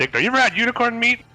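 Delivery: very high-pitched shouted yell. Voicing a character who yells across the fight: yelling out. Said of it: "as Ryder yells out".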